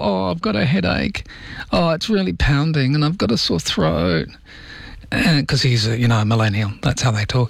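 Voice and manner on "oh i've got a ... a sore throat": sick-sounding moan. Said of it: "Francis has got the whole".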